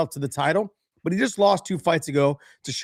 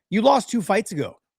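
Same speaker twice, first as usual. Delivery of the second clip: ordinary talk, nothing marked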